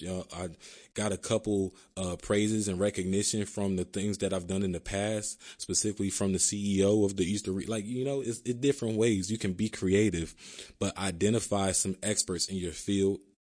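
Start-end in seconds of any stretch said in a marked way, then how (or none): none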